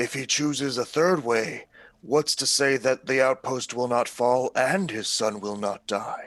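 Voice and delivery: theatrical stage whisper. Speaking in character during a game's persuasion attempt, in a stage whisper. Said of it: "like a stage whisper".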